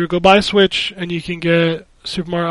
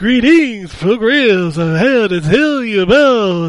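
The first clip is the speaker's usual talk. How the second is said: put-on vampire voice; 4 semitones higher, 3 dB louder than usual. Greeting Progress in a Dracula voice. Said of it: "It sounds almost like you're doing Dracula".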